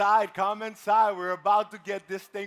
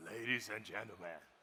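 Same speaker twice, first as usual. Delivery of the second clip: very deep, soft, hushed put-on stage-host voice; 10 semitones lower, 16 dB quieter than usual. Offering to try their best deep voice: deep put-on voice. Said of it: "let me try my best, like deep voice".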